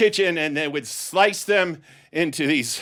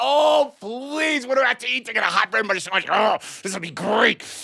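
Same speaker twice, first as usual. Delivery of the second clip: pitched-up, eager, begging schoolkid voice; 6 semitones higher than usual. Retelling a classmate in the lunch line hoping for seconds: imitating an excited kid begging. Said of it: "the kids are still jumping up and down".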